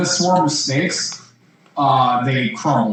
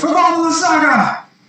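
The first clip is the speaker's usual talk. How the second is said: shouting, higher; 4 dB louder than usual. Voicing a gladiator rushing to attack: yelling a battle cry. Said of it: "basically yelling".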